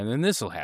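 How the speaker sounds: normal talking voice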